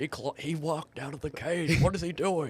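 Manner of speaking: high, slow, stretched-out wrestling-commentator voice. Mimicking a commentator who talked over others: Jesse Ventura impression. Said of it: "That was a good impression".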